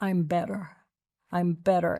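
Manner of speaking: quiet, low whispering. Recalling speaking to a woman, retelling a whisper to her. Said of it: "I whispered to her".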